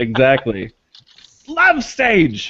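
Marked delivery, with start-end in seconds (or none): 1.5-2.5 shrill, very high, thrilled, excited shriek. Showing how a title with exclamation points must be said: excited scream. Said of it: "you have to say it excited and scream it".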